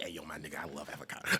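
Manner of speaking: very low, hushed, muttered goon voice. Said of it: "[name] doesn't sound like that".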